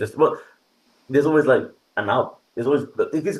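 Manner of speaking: stumbling over words. Talking about competition in games, stammering. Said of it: "sorry, I'm stammering here".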